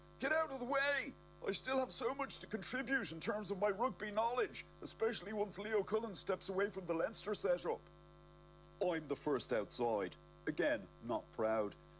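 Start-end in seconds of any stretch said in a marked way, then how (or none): 0.2-7.8 high, full-throated bellow at the top of the lungs. The narrator retells pushing out during a bomb panic, retelling a yell at top of voice. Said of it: "I'm going at the top of my voice".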